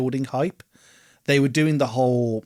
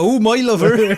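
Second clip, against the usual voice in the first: English West Country Somerset accent; 9 semitones higher, 8 dB louder than usual. Trying out regional accents with another person, in a Somerset accent. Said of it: "That's Somerset".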